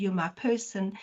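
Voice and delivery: ordinary talk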